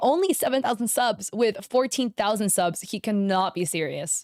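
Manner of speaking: ordinary delivery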